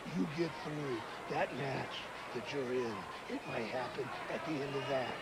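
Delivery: hushed whisper.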